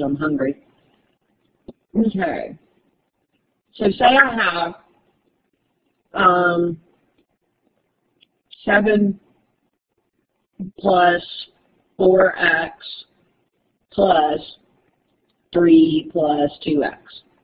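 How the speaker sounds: talking while chewing, mouth full. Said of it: "I just got a mouthful of cashews".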